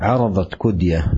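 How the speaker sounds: ordinary delivery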